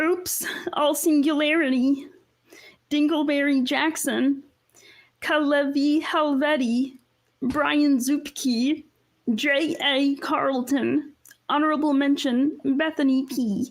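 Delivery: high-pitched cartoon Martian spaceman voice. Asked to read names as Marvin the Martian: Marvin the Martian voice. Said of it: "do your best Marvin the Martian".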